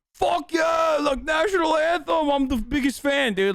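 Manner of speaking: put-on, very high-pitched, hyped, whooping hollering. Retelling a friend's reaction to the national anthem: imitating Austin losing it over the anthem. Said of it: "here he is fucking losing his shit".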